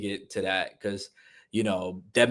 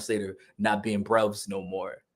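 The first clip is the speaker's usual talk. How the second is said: normal talking voice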